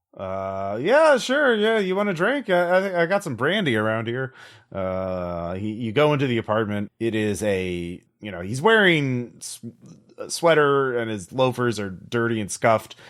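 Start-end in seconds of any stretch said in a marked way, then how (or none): 0.8-4.4 put-on tipsy, slightly drunk-sounding voice, pitched way up. Voicing a character greeting the agent at his door: acting a little drunk. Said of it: "he does seem a little drunk".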